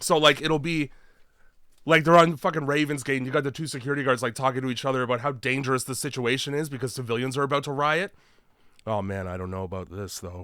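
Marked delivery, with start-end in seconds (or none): 8.9-10.5 flat deadpan delivery, no urgency, much lower, quieter. Acting out a dubbed security guard's line, flat with no urgency. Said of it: "I can really sense the urgency in your voice there".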